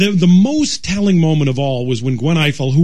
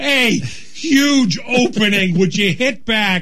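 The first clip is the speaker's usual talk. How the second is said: high, stretched-out screaming yell; 6 semitones higher than usual. Picturing the listener watching and reacting, the speaker acts out screaming at the monitor. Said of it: "screaming at the monitor".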